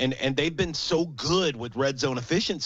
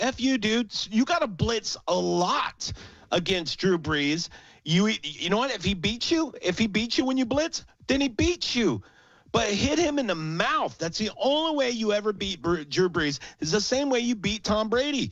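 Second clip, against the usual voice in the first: mock screaming yell; 8 semitones higher than usual. Retelling reacting to a coach's answer on tv: imitating himself screaming at the tv. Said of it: "And I'm screaming at the T V".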